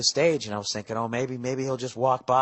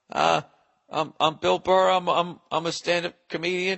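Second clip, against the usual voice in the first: nervous, pitched-up stammer with stumbling repeated starts; 6 semitones higher than usual. Retelling how Cosby asked who he was: retelling his tongue-tied stammer. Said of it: "I was tongue tied".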